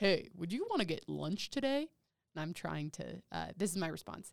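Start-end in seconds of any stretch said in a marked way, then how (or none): 0.0-1.9 loud, swooping, played-up exaggerated voice. Retelling texts from a classmate after a date: imitating Steven's voice. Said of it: "this is gonna be my Steven voice".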